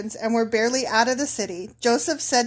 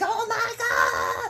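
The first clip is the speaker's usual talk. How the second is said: mock despairing, very upset, high, distraught cry; 9 semitones higher, 3 dB quieter than usual. Explaining how the brothers tear their clothes in despair: acting out despairing brothers. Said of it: "they're so upset".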